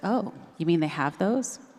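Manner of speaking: put-on bone-dry, unamused deadpan tone. Retelling a sister's friend's reply about ethics courses: imitating a deadpan remark. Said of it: "Deadpan, she just says".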